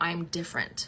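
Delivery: ordinary delivery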